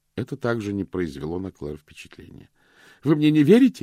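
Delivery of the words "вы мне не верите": breathless gasping, higher and louder. Vivien speaks to Claire, gasping. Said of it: "задыхаясь, проговорила Вивьен".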